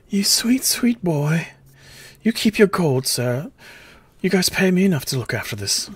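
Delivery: tearful voice, on the verge of tears. Offered gold to buy the little girl new clothes, she answers, tearful. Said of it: "tears beginning to well in her eyes".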